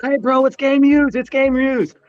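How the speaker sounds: put-on very high-pitched screaming yell. Recounting sitting in the front row at a game, he re-enacts his screaming to a player. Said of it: "I'm screaming out to Murray".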